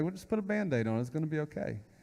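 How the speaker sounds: gentle, soothing, reassuring, comforting motherly voice. Imitating Mom comforting a hurt child: imitating Mom, compassionate and comforting.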